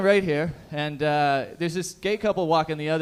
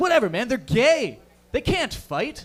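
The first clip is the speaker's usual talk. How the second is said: dismissive, offhand, brushing-off delivery; 6 semitones higher than usual. Retelling what a buddy said about the couple: imitating a buddy. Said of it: "my buddy says this. He's like".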